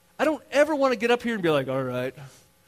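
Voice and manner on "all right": lifeless, flat, low droning monotone. Speaker imitates how he never wants to sound up here: Ferris Bueller teacher monotone. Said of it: "talking the Ferris Bueller teacher monotone voice".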